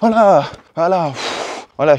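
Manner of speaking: out of breath, winded, slow panting words. Showing a camera in a video after running with it, out of breath. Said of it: "je suis essoufflé".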